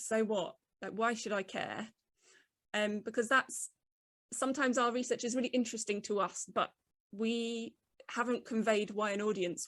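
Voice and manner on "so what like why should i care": put-on grumpy, sulky teenager voice. Giving advice on writing about research, grumpy teenager voice. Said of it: "in a grumpy teenager voice".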